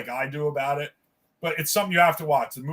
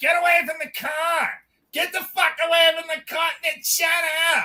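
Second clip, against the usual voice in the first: very high, annoying voice; 14 semitones higher than usual. Retelling a confrontation near a guy's car, imitating a woman's annoying voice. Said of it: "she's doing her annoying voice".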